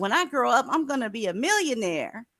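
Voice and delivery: put-on young child's way of talking. Speaker mocks how someone sounded, comparing him to little kids: imitating a little kid. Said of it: "You know how little kids be like".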